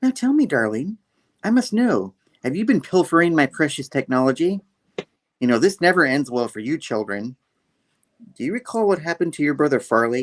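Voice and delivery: mock falsely honeyed, overly polite, fake-nice voice. Retelling how she turns from scolding to questioning the children, mimicking her nice voice. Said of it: "she's all like nice and like".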